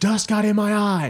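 very high-pitched, stretched-out, drawn-out scream. Retelling a clip where a player screams after missing a drill: imitating Ozzy Albies screaming. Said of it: "And he just keeps screaming".

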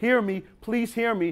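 mock pleading. Acting out someone begging the Galatians to listen, acting out pleading. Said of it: "that's paul pleading with the galatians".

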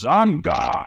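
brief, mild yelling. Recounting what a man he wanted thrown out yelled, retelling a yell. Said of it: "And then he yells".

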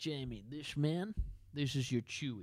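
ridiculous put-on Dutch accent. Retelling how a man explained marking in football: ridiculous dutch accent. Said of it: "in this ridiculous Dutch accent".

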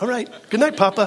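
put-on cheerful, brightened-up, very high little child voice. Retelling the child's reply after being forgiven, imitating Samantha brightening up. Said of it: "She just brightened up".

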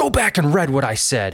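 curt, sharp, snappy retort. Retelling how a man snapped at a reporter after a speech, imitating someone snapping. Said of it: "he just like snapped at him".

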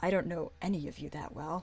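barely audible, very soft, hushed half-whisper. Answering a party member's half-whispered question in character: half-whispering very softly. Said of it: "I whisper very softly".

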